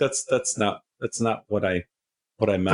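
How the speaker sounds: usual speaking voice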